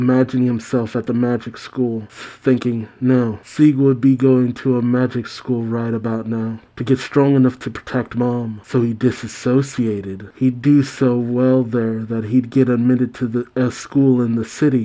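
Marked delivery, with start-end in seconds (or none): none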